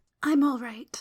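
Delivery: soft murmur. Reading a story aloud, a tearful girl answers an acolyte: murmuring. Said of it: "she murmured".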